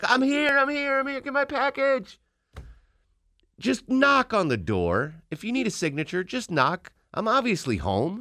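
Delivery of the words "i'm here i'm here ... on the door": very high, shrill, repeated screaming. Retelling yelling at the mail carrier driving off: retelling screaming at mail carrier. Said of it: "I'm like screaming as the lady's driving off".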